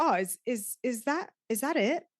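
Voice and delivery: put-on hesitant voice. Retelling what a man asked on looking at the dish, imitating slight trepidation. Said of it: "just slight trepidation and trying not to be like disappointed".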